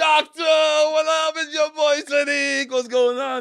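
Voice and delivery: very loud, very high shrieking scream. Retelling being born and greeting the doctor, retelling screaming at birth. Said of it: "I came out screaming".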